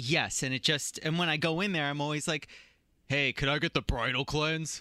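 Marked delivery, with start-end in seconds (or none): 3.1-4.8 put-on masculine voice, much lower pitch. Acting out how they always order the bridal cleanse, in a put-on masculine voice. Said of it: "I try and put on a more masculine voice".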